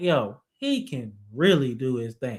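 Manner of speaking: normal talking voice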